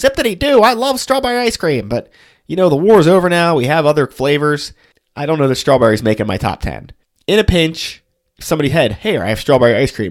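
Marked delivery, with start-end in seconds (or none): 0.0-1.9 put-on high-pitched, old-fashioned 1940s man voice. Imagining some guy back in the 1940s, in an old-timey 1940s guy voice. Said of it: "I'm sure there's some guy like going".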